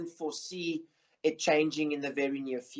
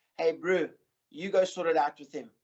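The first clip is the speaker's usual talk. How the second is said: put-on South African accent. Retelling what a judge on the panel told him, imitating Wade Sharp's South African accent. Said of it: "in his South African accent".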